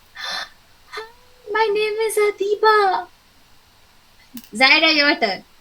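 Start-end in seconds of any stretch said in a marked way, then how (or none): 0.2-3.1 astonished, high, drawn-out surprise. Demonstrating a self-introduction for a class expression exercise, surprised. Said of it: "in a surprised expression?".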